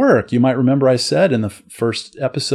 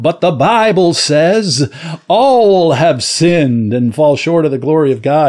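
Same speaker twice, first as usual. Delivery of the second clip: preaching pulpit voice in a sermon style; 3 semitones higher, 4 dB louder than usual. Showing how one Bible verse could dismiss the argument: Billy Graham voice. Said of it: "put on my Billy Graham voice and say".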